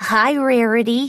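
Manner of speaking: ordinary delivery, nothing marked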